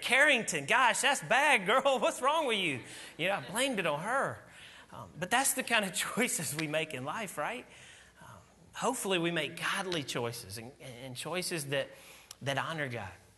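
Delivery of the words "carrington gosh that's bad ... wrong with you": loud, raised, carrying outside voice, pitched high. Dad recalling how he blamed a mess on his daughter, retelling a loud outside voice. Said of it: "in that outside kind of voice".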